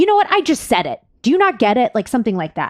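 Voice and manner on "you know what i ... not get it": curt, rude, snippy snap, pitched up. Retelling a phone call with a pizza shop worker: imitating someone snapping rudely. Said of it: "kind of went off on me".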